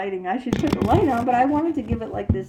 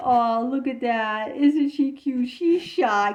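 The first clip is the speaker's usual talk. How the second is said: put-on slow, patronizing coo, as to a small child; 3 semitones higher than usual. Imitating people who find a shy girl cute: imitating adults cooing condescendingly. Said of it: "say to little kids condescendingly".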